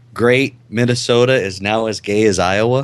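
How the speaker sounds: ordinary delivery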